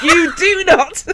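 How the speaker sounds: loud, high, furious red-mist screaming yell. Recounting the moment they started screaming at a man, retelling a scream. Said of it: "I just started screaming at him".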